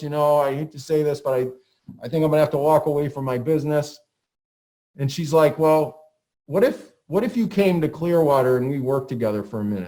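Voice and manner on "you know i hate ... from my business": ordinary delivery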